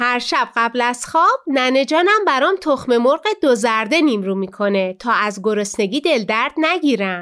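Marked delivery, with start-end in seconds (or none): none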